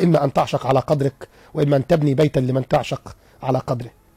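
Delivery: plain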